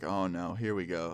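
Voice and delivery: ordinary talk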